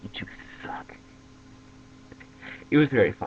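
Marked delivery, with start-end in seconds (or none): 0.0-0.9 soft, exasperated whisper. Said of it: "she's just like".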